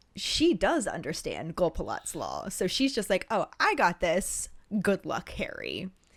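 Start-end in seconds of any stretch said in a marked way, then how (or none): none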